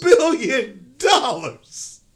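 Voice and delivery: slow, laughing through the words. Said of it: "I can't say it without laughing".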